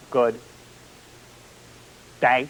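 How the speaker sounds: good, held long pause, then day. Imitating Paul Harvey pausing for every word, Paul Harvey pause after good. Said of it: "you know how Paul Harvey pauses for every word?".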